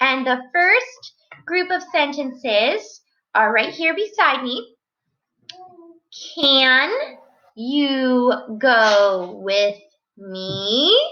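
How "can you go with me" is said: pitch lifts up on final "me". Showing sentence examples, a question ending with a rising pitch on me. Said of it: "so my voice goes up at the end".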